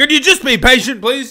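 shrill, high-pitched, loud yell. Asking viewers waiting for their reviews to be patient, yelling. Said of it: "I don't know why I'm yelling at you".

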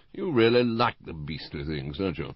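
plain

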